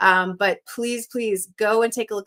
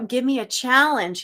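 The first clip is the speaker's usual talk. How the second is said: mock screaming, shouting; 4 semitones higher than usual. Streamer reads a viewer's all-caps chat message aloud, mock-screaming it. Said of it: "he's saying in caps, like he's screaming at me".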